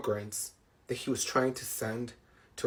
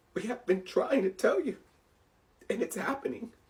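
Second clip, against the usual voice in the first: emotional delivery, higher pitch; 11 semitones higher than usual. Warning viewers about a law being used again, getting emotional. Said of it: "I'm sorry that I'm getting emotional".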